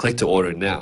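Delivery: ordinary talk, nothing marked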